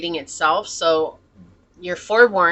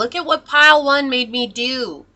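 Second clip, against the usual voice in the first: mock, high-pitched screaming in a blaming tone; 6 semitones higher, 4 dB louder than usual. Acting out a hurt person blaming everyone: imitating someone screaming. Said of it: "they're screaming at everyone".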